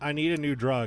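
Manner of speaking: normal talking voice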